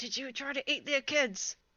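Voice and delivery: hushed whisper. Playing Quinn turning to the guy in the cage to ask him, whisper. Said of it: "it like whispers like".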